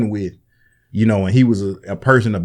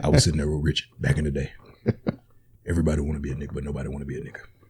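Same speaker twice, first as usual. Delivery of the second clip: very low, deep-dropped voice; 7 semitones lower, 8 dB quieter than usual. Doing an impression of a comedian for another speaker: Paul Mooney impression. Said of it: "That's my Paul Mooney impression".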